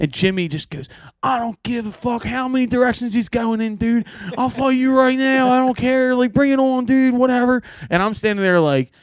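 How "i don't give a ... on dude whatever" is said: put-on Fishtown Philadelphia neighborhood accent. Retelling a friend's reply to the management people: imitating a full Fishtown accent. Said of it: "going full fish town".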